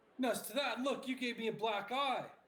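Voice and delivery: high, loud yelling right up close. A character shouts at the listener's character again, yelling in their face. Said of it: "starts kind of like yelling in your face".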